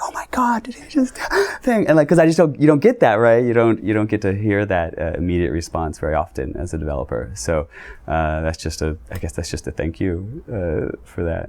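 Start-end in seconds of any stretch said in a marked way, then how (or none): 0.0-1.9 put-on murmur, much higher. Developer recalls fans reacting at a demo, retelling fans' murmur. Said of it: "hearing people murmur like".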